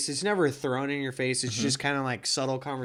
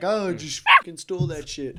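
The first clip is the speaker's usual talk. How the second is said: mock cocky boastful tone, higher and louder; 4 semitones higher, 5 dB louder than usual. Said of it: "this dude's being all tight".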